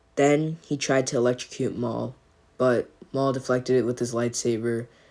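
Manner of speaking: plain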